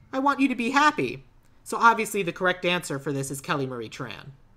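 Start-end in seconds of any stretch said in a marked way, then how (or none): 0.1-1.2 high, fond, sweet gushing aww. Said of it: "you should just be like".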